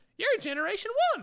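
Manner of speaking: squeaky cartoon mouse-like voice. Retelling a scene where Omega squints at Rex: Omega impression like Mickey Mouse. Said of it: "your Omega impression gets closer and closer to Mickey Mouse".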